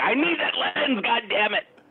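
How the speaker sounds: very high blurted outburst. Retelling a friend's reaction to the lens being taken away: imitating Sam's outburst. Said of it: "and you're like".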